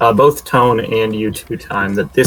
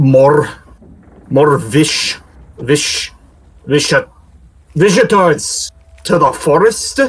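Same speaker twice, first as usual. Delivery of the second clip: slurred, sozzled stammer, stumbling over words; 4 semitones higher than usual. A groaning creature rolls over and blinks awake, speaking in a drunken, slurring, booming voice. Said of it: "It slurs in a deeply drunken, booming voice".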